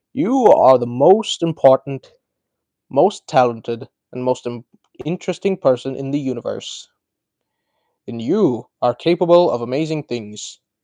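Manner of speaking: read-out narrator voice as a wizard mentor. Reading a viewer's quote aloud: Morgan Freeman impression. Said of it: "in my best Morgan Freeman impression".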